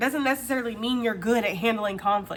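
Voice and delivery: ordinary talk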